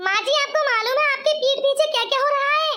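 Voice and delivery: worked-up, urgent, agitated, alarmed blurting. A daughter-in-law telling tales to her mother-in-law, shouting. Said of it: "अरे बहू इतना चिल्ला क्यों रही है?".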